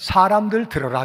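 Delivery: plain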